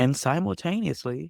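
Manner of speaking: simultaneously held open on a rising, continuing comma tune.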